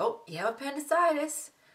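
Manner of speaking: bright, happy, very high, swooping cheerful delivery. Retelling how the doctor broke the diagnosis: imitating someone saying it happily. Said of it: "Just like she said it happily".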